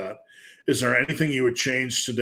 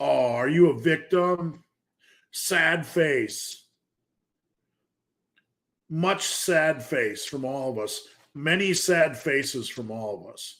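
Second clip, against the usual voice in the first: heavy sarcasm with false, fake-pitying sympathy; 3 semitones higher than usual. Mocking people who make excuses about gaining weight: sarcastic. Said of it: "I'm being sarcastic".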